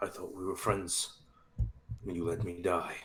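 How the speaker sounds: barely audible, very hushed, quiet, bitter mutter. Voicing a dead friend who mutters an accusation: muttering under his breath. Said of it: "he mutters".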